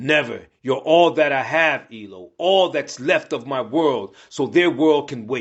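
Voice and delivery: ordinary talk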